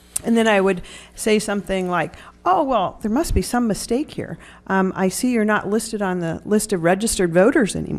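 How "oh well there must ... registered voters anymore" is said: normal talking voice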